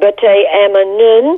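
put-on strong French accent laid on thick. Speaker retells a nun's reply to his remark about her outfit, strong French accent. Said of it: "she said to me with a very strong French accent".

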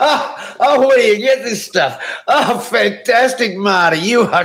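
very high, fake laughter while talking. Taking a test where one must laugh at every joke: put-on laughing while talking. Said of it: "you're gonna laugh a lot at what I say".

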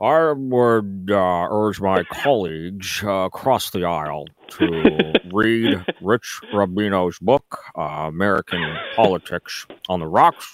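very slow, measured, halting, pausing on every uh. Doing an impression for the other speaker, Mitch McConnell impersonation. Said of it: "I do a pretty good Mitch McConnell impersonation".

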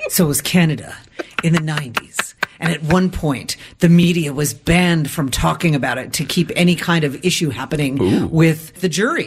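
documentary-style true crime narrator voice. Asked by another speaker to adopt a true crime narrator voice, telling a case. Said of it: "Can you adopt more of a true crime narrator voice?".

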